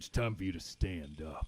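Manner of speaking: gruff, deep, guttural growling dragon voice. Narrating a dark scene, voicing an unseen speaker in a deep, guttural, draconic growl. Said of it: "a gruff voice, deep, guttural, growling, and draconic".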